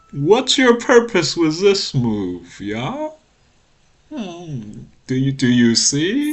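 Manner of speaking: high, swooping, sing-song voice. Doing an impression of another Go streamer for the viewers: imitating Bats Go. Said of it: "My impression of Bats Go".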